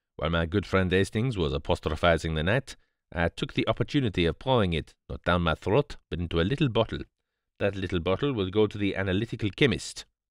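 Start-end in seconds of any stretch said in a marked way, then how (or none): none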